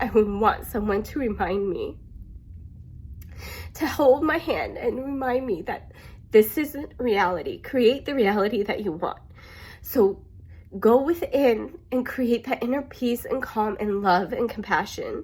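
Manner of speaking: moved, earnest, heartfelt emotional tone. Speaking to listeners about someone in a hard situation, getting emotional. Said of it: "sorry, I'm getting emotional".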